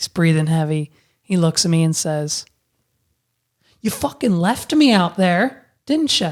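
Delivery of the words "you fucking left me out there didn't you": put-on Scottish accent, accusatory tone. Retelling what a breathless father said after stumbling out of the ocean: Scottish-sounding accent. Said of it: "Is your dad, like, Scottish?".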